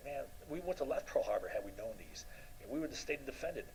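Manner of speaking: normal talking voice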